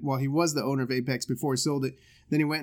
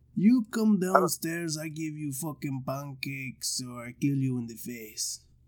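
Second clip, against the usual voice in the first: put-on Russian accent with broken English. Asked by another speaker to try it in Russian: Russian accent. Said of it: "Can you do a Russian fucking pancakes?".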